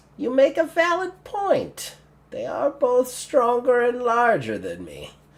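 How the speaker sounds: little goblin voice. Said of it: "the goblin kinda looks at them both and goes".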